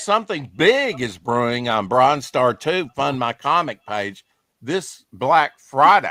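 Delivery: ordinary delivery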